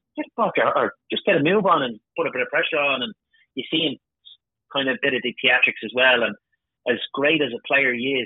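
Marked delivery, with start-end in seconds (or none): 0.2-3.0 put-on cranky, grumpy old man voice, scolding tone. Retelling shouting at a player on the telly, imitating a grumpy old man shouting. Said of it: "I'm shouting at the teddy like a grumpy old man".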